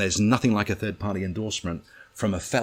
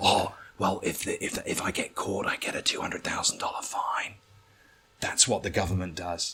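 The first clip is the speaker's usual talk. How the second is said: put-on male whisper, quieter; 4 dB quieter than usual. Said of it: "why are you fucking whispering?".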